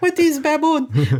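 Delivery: put-on very high-pitched old woman voice, Cuban accent. Imitating an old cuban mother asking a question: imitating my old cuban mother. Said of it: "my mother impersonation there, the old Cuban".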